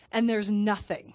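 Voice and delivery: ordinary talk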